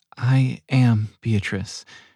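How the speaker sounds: barely above a whisper. Sitting on a bench, a woman introduces herself to a man, barely above a whisper. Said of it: "her voice barely above a whisper".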